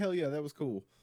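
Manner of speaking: ordinary talk, nothing marked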